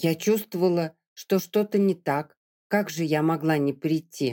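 ordinary delivery

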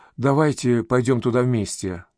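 plain

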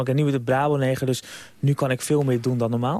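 ordinary talk, nothing marked

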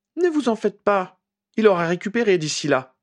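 merciless, unsympathetic. Narrator reads Hermione answering Shacklebolt about Harry, pitiless reply. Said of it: "répondit Hermione sans pitié".

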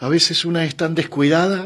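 shy, soft, timid voice. Clara speaks to the passenger holding her hand, timidly. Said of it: "dijo tímidamente Clara".

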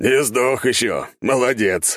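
slow, high, mocking guffawing jeer. A captain greets the narrator among congratulating guests, loud guffawing. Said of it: "громко гоготнул Таранов".

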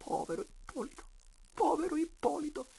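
whispered, dazed murmuring. Still dazed, a man stands apart from the others, murmuring to himself. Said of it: "mormorava tra sé in disparte".

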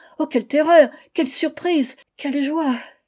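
stuttering. Narrating a wife greeting her husband at the door, stammering. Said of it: "en balbutiant".

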